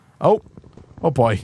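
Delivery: ordinary delivery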